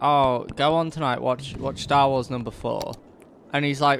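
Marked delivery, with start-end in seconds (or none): none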